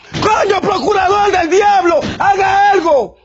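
indignant, outraged outburst. A man on a TV program addresses the prosecutor, indignant. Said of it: "¡Es que me siento indignado!".

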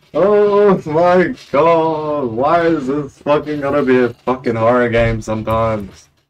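high, loud, frightened screaming. Startled while playing a game, screaming in fright. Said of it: "Sorry for all the screaming".

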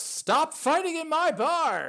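very loud, very high, drawn-out yelling shout. Voicing the dwarven barkeep as a fight breaks out: dwarven barkeep shouting. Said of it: "just shouts".

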